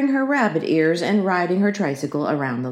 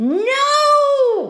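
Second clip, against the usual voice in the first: long, very high, drawn-out shrieking scream; 4 dB louder than usual. A girl screams at her mother, who lifted her off the tricycle: screaming. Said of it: "screamed Ramona".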